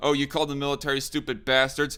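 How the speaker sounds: normal talking voice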